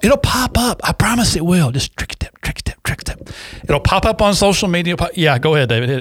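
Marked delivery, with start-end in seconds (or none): 1.7-3.3 hushed voice, quieter. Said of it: "just whisper".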